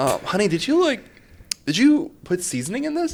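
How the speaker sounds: very high, stunned, shocked voice. Retelling a boyfriend tasting a failed dish, imitating a shocked boyfriend. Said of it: "shocked almost".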